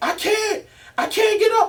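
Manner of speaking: mock very high, drawn-out, desperate pleading scream. Retelling being handcuffed and ordered to get up, retelling a desperate scream. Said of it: "I start screaming".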